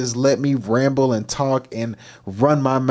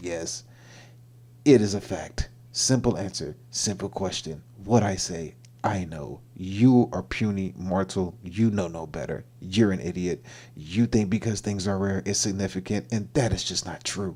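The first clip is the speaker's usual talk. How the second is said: deep, soft, dead-serious robot voice; 5 semitones lower, 7 dB quieter than usual. Retelling what the robot said in its deep voice: deep robot voice. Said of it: "He had the deep voice".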